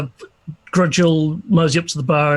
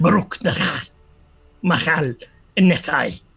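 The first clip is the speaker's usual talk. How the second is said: muttered under breath, slower. The speaker describes Grudge's reaction, then voices him: Grudge swearing under breath. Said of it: "He's swearing under his breath in Dwarvish".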